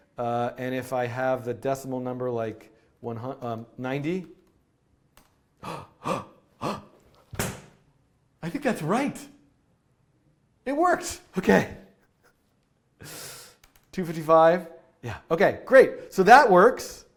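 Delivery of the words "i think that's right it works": gasping, much higher pitch. Coder testing a decimal-to-binary function live, gasping.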